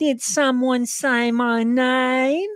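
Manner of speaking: very high put-on Florida accent, one word drawn out. Asked to do it again, speaker repeats an American Florida accent impression. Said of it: "do it again".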